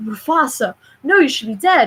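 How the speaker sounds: mock frightened, horrified cry. Retelling a movie scene, imitating a terrified Simba. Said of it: "And he's terrified".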